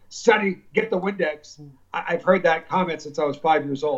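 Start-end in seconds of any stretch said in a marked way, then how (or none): 0.1-1.6 put-on strong Greek accent, laid on thick. Speaker quoting a dad's line at the diner, imitating a strong Greek accent. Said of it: "my dad with a very strong Greek accent".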